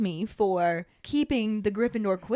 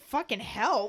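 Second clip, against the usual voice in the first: put-on incredulous, outraged tone. Recapping a scene in which someone offers to help: McGonagall's mock outrage. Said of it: "McGonagall's just like".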